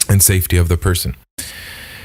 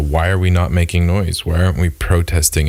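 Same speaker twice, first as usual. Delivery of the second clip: ordinary talk, nothing marked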